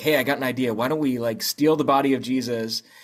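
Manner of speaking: ordinary talk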